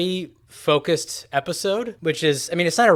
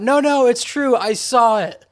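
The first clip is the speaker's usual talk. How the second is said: high, screamed-out protesting tone. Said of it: "screamed out".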